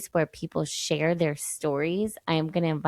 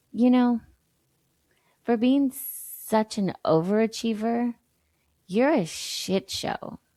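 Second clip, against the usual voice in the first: mock touch of disgust and letdown, pitched up; 5 semitones higher than usual. Retell what your husband said to you over his coffee, imitating slight disgust and disappointment. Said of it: "he said it with a little bit of disgust and disappointment".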